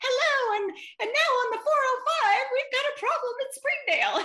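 very high, helium-like radio voice. Recalling an old radio traffic recording, the speaker imitates it: imitating own past high voice. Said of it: "my voice was very high".

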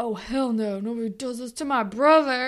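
put-on boy character voice. Retelling a scene where Drew defends his brother: Drew impression. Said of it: "It's a really good Drew impression".

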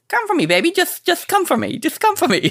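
very high, swooping put-on voice, pitch swinging widely. Showing how the wife should say a line: Jay Leno voice. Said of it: "say it in a Jay Leno voice".

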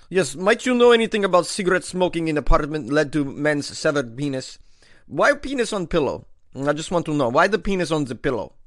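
put-on, fake Russian accent. Pretending to phone the Moscow police, in a fake Russian accent. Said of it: "I have a great Russian accent".

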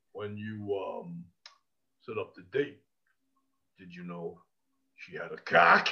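very low, deep, soft rumbling voice. Retell the question put to a guy in an interview, as a Porteous impression in a real low, deep voice. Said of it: "Porteous has this real low, deep voice".

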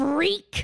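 high-pitched put-on mean voice. Retelling a scene, the speaker quotes Allison's reaction: Allison's mean voice, put on. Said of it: "In her mean voice".

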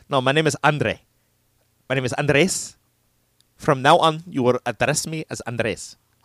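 put-on Spanish accent. Joking about suddenly claiming to be Chilean; put-on Spanish accent. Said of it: "giving you like a Spanish accent".

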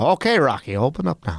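put-on lilting, old-time stage-Irish policeman brogue. Recalling old cartoon cops banging on a door, in a Looney Tunes Irish cop accent. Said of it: "typical old days Irish cop".

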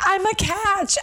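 acted, very high, shrill, drunken bragging yell. Describing how Jamie, drunk off Red Bull, yells at guy undergrads, imitating Jamie yelling. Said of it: "yelling at a bunch of like guy undergrads".

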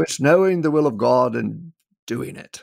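gentle, put-on British accent. Recalling what a speaker at his campus answered him, in a british accent. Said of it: "in his British voice".

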